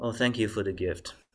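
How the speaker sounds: ordinary talk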